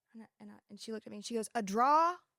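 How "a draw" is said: loud, drawer said as draw, New Jersey style. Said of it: "I'm gonna say it like she said it".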